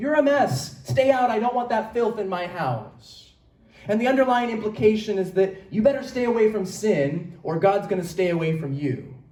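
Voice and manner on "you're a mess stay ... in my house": put-on scolding mother voice, yelling. Picturing a mom whose kids come home muddy: imitating a mom yelling. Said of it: "the mom yells".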